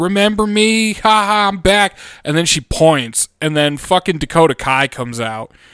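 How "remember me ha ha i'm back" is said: high, drawn-out yell. Retelling how she came out at Bianca: imitating Bayley yelling. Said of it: "she's yelling at Bianca like".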